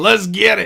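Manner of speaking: loud, high-pitched hyped-up yelling cheer.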